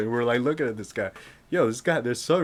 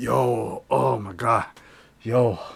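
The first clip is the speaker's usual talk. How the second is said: mock trembling, shaky voice, very slow and drawn out. Retelling the boss at six in the morning waiting for the deli: imitating a shaking man. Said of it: "The guy was shaking".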